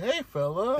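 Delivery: high-pitched puppy talk. Mocking how the other person said something: imitating talking to a puppy. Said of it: "Said it like you were talking to a puppy".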